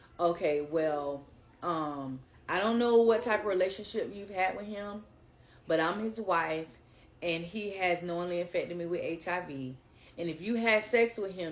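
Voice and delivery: ordinary talk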